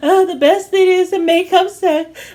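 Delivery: mocking, high, gushing voice.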